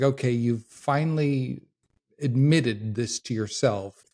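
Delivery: ordinary talk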